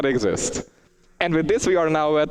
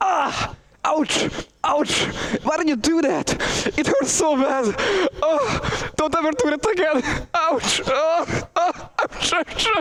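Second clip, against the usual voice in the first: very high put-on yelps and cries of pain; 11 semitones higher than usual. Reading out a donation request, then acting: mock pain from being shot. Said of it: "do his best getting hit with a bullet impression".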